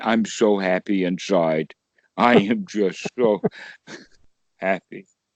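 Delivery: low, flat, cheerless monotone with no happiness. Teacher showing how not to teach happiness, joyless tone. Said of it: "that tone of voice does not exude happiness".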